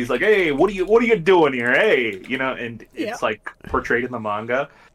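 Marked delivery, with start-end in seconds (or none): 0.2-2.5 put-on Jersey accent, higher and louder. Describing a manga character who talks like a Jersey boy: put-on Jersey accent. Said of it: "he speaks like a Jersey boy".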